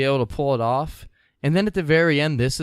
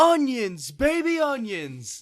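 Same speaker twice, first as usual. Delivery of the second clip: high, drawn-out announcer yelling. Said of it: "he's the one who would yell".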